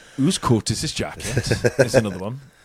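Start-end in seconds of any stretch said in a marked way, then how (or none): 0.2-1.5 put-on Welsh accent, very low and soft. Showing stereotypical phrases people say when trying a Welsh accent: put-on Welsh accent. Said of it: "when they're trying to do a Welsh accent".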